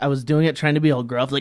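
ordinary talk

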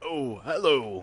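loud, orc-style character voice. Answering a player's greeting while voicing a character, in an orc-like voice. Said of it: "you sound like that orc".

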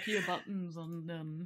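mocking put-on voice, low and slow.

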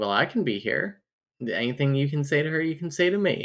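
usual speaking voice

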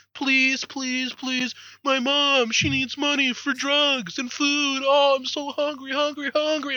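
put-on high-pitched, soft, pleading little-kid voice. Complaining about a kid tugging his sleeve in a bar: imitating a begging kid. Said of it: "a kid comes and fucking tugs on my sleeve".

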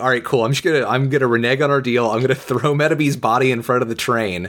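plain

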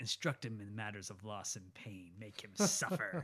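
dramatic, villainous Shakespearean delivery. Quoting the villain's Shakespearean dialogue from the film: villainous Green Goblin voice. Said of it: "Shakespearean dialogue, villainous".

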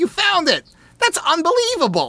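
very high-pitched, swooping cadence. Retelling a customer's reply after a book was found: Wallace Shawn impression. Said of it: "he said it with the same cadence".

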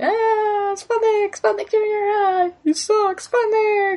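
voicing a cheering crowd. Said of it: "cheering and clapping".

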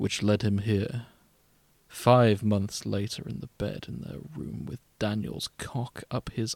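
half-hearted, lazy attempt at a villain voice. Told to go for it, perform the next lines in a half-assed Thanos impression. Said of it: "I'm going to try and do a half-assed Thanos impression".

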